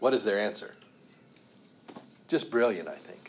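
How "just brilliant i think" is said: dry, ironic, sarcastic tone. Calling the chief priests' answer to Pilate brilliant, said sarcastically. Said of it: "I'm saying that sarcastically".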